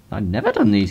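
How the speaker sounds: cracking, breaking voice partway through. Telling viewers he has never made these videos, voice breaking. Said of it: "with his voice breaking in a manly fashion".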